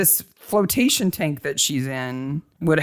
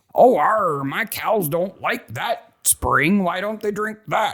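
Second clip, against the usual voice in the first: bad put-on English farmer accent, higher; 4 semitones higher than usual. Retelling how a farmer in Epsom spoke: bad English farmer accent. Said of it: "that's a really bad accent".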